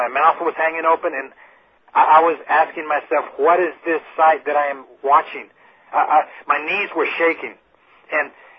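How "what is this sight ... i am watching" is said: plain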